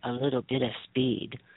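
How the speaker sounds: whispering, hushed voice. Admitting something from the past, whispering. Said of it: "I'm gonna whisper".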